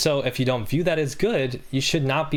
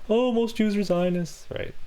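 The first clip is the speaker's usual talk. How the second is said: over-the-top, high, exaggerated silly-person voice; 9 semitones higher than usual. Imitating how a random silly person talks, in an exaggerated silly voice. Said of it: "that's my silly voice".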